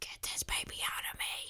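quiet, sinister, devilish whisper. Recalling what was said to Lucas during labor, devilish voice. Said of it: "in like a devilish voice".

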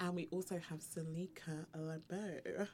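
soft dominatrix-style hostess voice. Host introducing another guest, in a brothel-madam introduction voice. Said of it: "I don't know why I'm talking like that".

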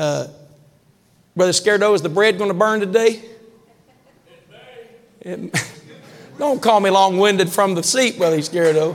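light, playful teasing tone. Mid-talk, speaker turns aside to tease a fellow brother, teasing. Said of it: "I'm teasing you".

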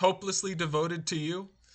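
plain

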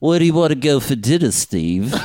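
high, mock elderly grandmother voice.

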